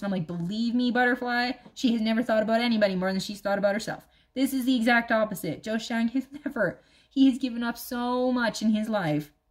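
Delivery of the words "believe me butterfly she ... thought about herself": usual speaking voice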